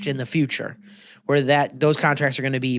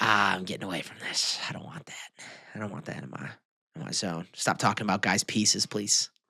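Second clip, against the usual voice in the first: breathy, whispered voice; 6 semitones lower, 10 dB quieter than usual. Joking about a documentary: imitating Jamie Foxx. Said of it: "Jamie Foxx. He's like".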